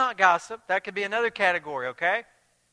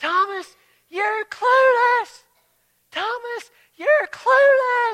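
very loud, slow, high, drawn-out coach-style yell; 8 dB louder than usual. Retelling a soccer game where a coach shouted across the field: imitating a coach yelling. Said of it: "he kept yelling across the field".

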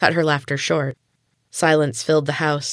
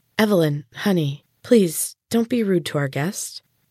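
hesitating, uncertain, unsure tone; 2 semitones higher than usual. A mother asks her daughter Evelyn not to be rude to their guest, hesitant. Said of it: "[name]'s voice was hesitant".

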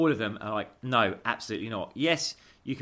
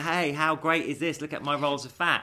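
mocking put-on influencer laughing, much higher; 5 semitones higher than usual. Discussing an article about influencers, mockingly imitating laughing influencers. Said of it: "holding their rolls of fat and laughing".

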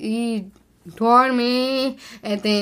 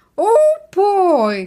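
put-on high squeaky boy voice, words stretched out; 10 semitones higher, 6 dB louder than usual. Asked on the show to repeat the impression done at a character greet: Mickey Mouse impression. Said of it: "What's that impression sound like?".

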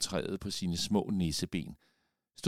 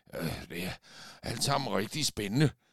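gasping, breathless, winded. A character hurrying beside a companion, trying to make her slow down, gasping out of breath. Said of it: "gispede Olaf forpustet".

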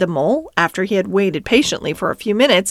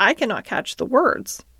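ordinary delivery, nothing marked

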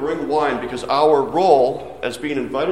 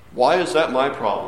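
mock voice of a thirty-year-old man. Retelling Jesus's reply to his mother, in Jesus's talking-to-mom voice. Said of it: "in his best 30-year-old, still talking to his mom voice".

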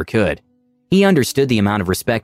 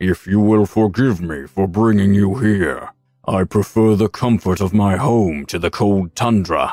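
big, imposing, monstrous dragon voice. Narrator voicing a dragon addressing the narrator in its cave: thunderous dragon voice. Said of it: "Its thunderous voice echoed".

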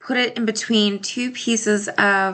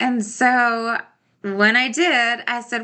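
ordinary delivery

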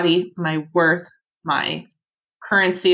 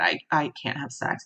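very soft, hushed whisper under the breath; 4 semitones lower, 7 dB quieter than usual. Retelling what was said to an old lady: imitating own past whisper. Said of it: "And I whispered to her".

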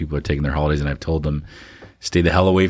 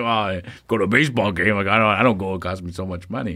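mock complaining old man voice; 3 semitones higher than usual. Teasing the other speaker about movie costs: imitating an old man complaining. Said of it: "you sound like an old man".

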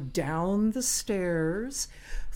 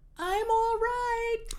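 put-on very high, tiny little old grandmother voice. Telling a backstage story, the fallen woman answers from the pit: little grandmother voice. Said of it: "you hear this little grandmother voice say".

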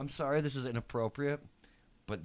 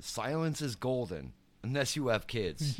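normal talking voice

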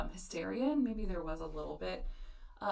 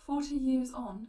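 bad, put-on English accent, loud and high; 6 semitones higher, 7 dB louder than usual. Reading out the title of a lord's 1922 memoir, in a terrible English accent. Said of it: "That's a terrible accent".

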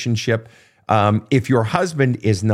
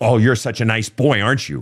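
said in anger. Showing how a parent might speak to a child: angry tone. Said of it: "they sense the anger in your voice".

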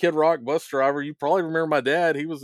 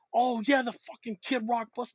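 high, hushed, soft put-on voice; 7 semitones higher, 5 dB quieter than usual. Speaker retelling how Lars recalls him once reminded, doing a Lars impression. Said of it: "Good impersonation".

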